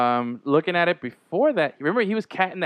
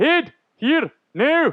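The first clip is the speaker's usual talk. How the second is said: put-on hammed-up Scottish accent, very high, over the top; 11 semitones higher, 4 dB louder than usual. Retelling a movie scene with the father character: over-the-top Scottish accent. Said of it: "over-the-top Scottish guy".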